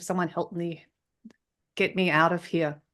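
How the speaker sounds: ordinary talk, nothing marked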